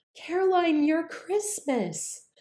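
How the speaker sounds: play-acted trembling, shaky, very high-pitched voice. Retelling what a coworker said to her in the elevator, imitating a shaky voice. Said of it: "she had kind of a little shake in her voice".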